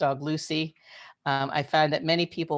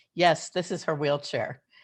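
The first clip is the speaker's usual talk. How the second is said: mock sarcastic tone. Retelling an answer to a flight attendant: imitating own sarcastic reply. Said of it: "I would sometimes sarcastically answer".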